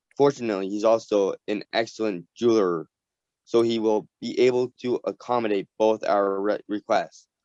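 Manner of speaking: usual speaking voice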